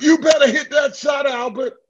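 mock very high, shrill screaming. Retelling a game where his mom screams from the stands: imitating his mom screaming. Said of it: "my mom screams out".

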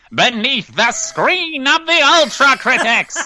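loud, very high-pitched cartoon villain shriek. A host says the show's new title in Skeletor voice. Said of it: "constantly say it in Skeletor voice".

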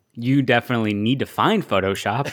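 normal talking voice

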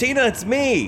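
rushed, very high, shrill yell. Showing someone how to call out to Tina right away, yelling fast. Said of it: "yell real fast".

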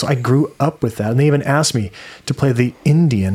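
normal talking voice

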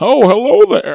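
put-on old man voice. Joking about greeting boobs like an old friend: old man voice. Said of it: "I feel like an old man".

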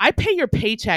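haughty, sassy, attitude-filled delivery. Recounting a customer who got an attitude when asked for id; imitating a sassy customer. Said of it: "starts cranking her neck at me and goes".

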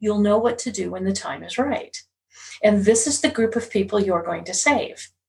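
usual speaking voice

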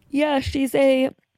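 talking through a yawn. Discussing a big psychic court case, speaking through a huge yawn. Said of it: "That was a huge yawn".

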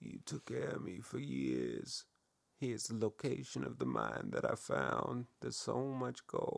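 rough, creaky, swooping dying-mobster voice. Retelling a dying man's words to a boarding house owner, retold like a dying mobster. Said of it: "It just sounds like a dying mobster".

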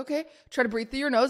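normal talking voice

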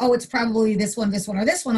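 ordinary talk, nothing marked

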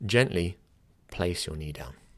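brief pause following the word "gently". Showing how to phrase an instruction, with a short pause after "gently". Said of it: "notice the way gently had a little pause there".

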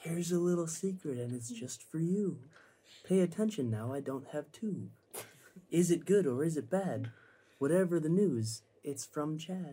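secretive, barely-there, very quiet half-whisper. Casting a message as a rhyme, asked to half-whisper very quietly. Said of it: "Whisper like your life depends on it".

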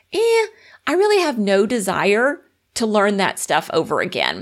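ordinary talk

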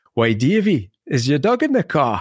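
put-on northeast English, Northumberland accent. Retelling what the cleaning lady said to him, in a Northumberland accent. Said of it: "she had the funniest accent".

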